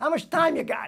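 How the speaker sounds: put-on Brooklyn accent. Telling about asking for the John Devoy papers at the library, Brooklyn accent. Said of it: "someone would probably say in their Brooklyn accent".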